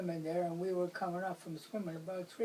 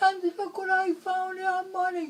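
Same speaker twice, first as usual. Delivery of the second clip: far-off, very high and very loud holler; 13 semitones higher, 8 dB louder than usual. Retelling a friend calling from up the dump: imitating someone hollering. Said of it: "he was hollering".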